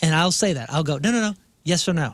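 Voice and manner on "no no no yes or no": mock impatient tone. Retelling own reaction when a partner dances around answers: imitating own impatient tone. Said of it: "I start to get impatient".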